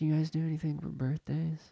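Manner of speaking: hushed, barely-there, near half-whisper voice. Retelling someone speaking at a busy counter: imitating someone talking very quietly. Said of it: "keeps talking that quietly".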